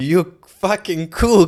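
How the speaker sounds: furious, high, slow scream.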